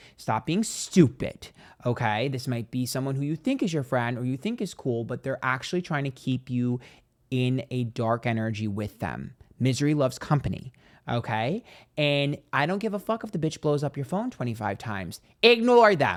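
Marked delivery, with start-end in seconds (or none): 12.0-16.2 full-volume, loud, raised-voice yelling. Telling the listener to ignore someone who keeps calling, yelling. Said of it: "I'm yelling".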